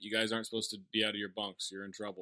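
mock very dry deadpan, low and flat. Describing a scene where boys are caught out of their bunks, Janeane Garofalo deadpan. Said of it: "Janine says very deadpan".

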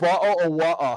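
terrible, clumsy put-on English accent. Trying again at a phrase you admit you can't do: bad English accent. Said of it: "I have a terrible English accent".

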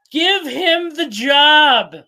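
very loud, high, slow, shrill holler, "job" stretched. Retelling how a girl grabbed the phone during an interview, imitating her yell. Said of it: "and she yells".

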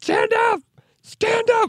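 acted very slow, booming, drawn-out shout, high and excited. Retelling how Ballmer demanded a standing ovation: imitating Ballmer demanding excitedly. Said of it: "when he was demanding everyone stood up".

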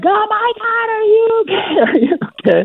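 very high, stretched-out put-on shrieking scream. Retelling a lady on top of the cliff calling to the speaker; imitating a lady screaming. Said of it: "this lady that was on top of the cliff was like screaming like".

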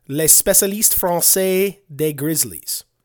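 unsure, careful attempt at French pronunciation. Reading out a listener's french title, attempting french pronunciation. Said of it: "Did I say that right?".

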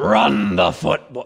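low, animated, hammed-up coach voice. Host mocks a caller's imitation by repeating it: Rex Ryan impression. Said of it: "that's just awful".

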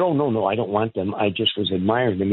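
ordinary delivery

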